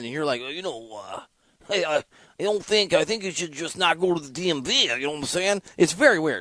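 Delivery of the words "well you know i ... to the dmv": imitated Jersey accent. Describing how the other host sounds on the app, imitating a Jersey accent. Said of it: "you sound on the app a lot more Jersey".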